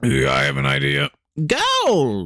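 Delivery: high, manic, crazy gleeful villain voice, rough edge. Pitching an idea to the other speaker: crazy gleeful voice. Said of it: "crazy-go-lucky murderer bear, and he sounds".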